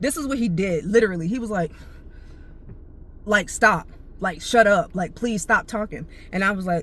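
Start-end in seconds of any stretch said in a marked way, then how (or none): none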